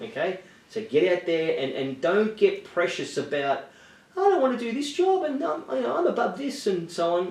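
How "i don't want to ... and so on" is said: very high put-on girl voice. Lecturing people on JobSeeker, mimicking a picky job seeker in a put-on girl voice. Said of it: "That was my girl voice".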